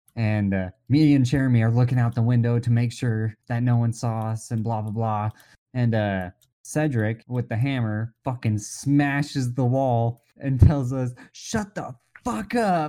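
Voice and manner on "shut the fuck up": mock yelling, higher. Retelling how a friend smashed the wall with a hammer: imitating someone yelling. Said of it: "Just fucking yells it".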